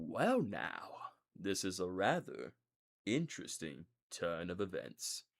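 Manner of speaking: hushed, soft, slow murmured character voice. A streamer shows a favorite character voice he does: Harley Sawyer voice. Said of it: "I do try to personate a voice".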